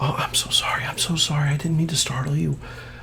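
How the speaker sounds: soft, unvoiced, apologetic whisper.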